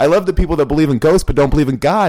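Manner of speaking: high, loud, fast heated rant. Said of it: "Sorry, I'm getting heated".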